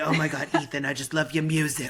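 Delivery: imitated smoky voice. Recalling a first year of teaching, the speaker quotes a woman: imitating Brenda's smoky voice. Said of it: "She had a really smoky voice".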